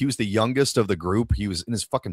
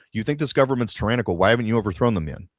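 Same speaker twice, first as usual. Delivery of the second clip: usual speaking voice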